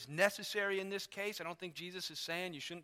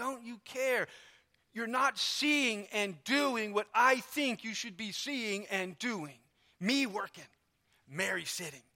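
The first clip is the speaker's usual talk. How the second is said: mock accusing, indignant, rebuking scolding tone; 4 semitones higher, 4 dB louder than usual. Retelling how Martha rebukes Jesus for not caring: acting out an angry rebuke. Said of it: "she rebukes him".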